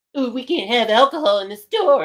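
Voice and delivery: mocking, high little goblin-boy voice. Retelling what the store worker said: mocking imitation of store worker. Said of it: "little goblin boy".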